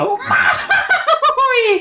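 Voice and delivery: very high-pitched, video-game style voice. Imitating how another speaker does a Mario voice: Mario voice. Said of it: "You do like the".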